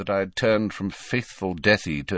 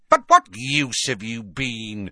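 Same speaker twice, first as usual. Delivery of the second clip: taunting, sneering voice that swoops; 2 semitones higher, 3 dB louder than usual. Narrator reads one character's question to another: sneering. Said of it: "Sneered Bellatrix".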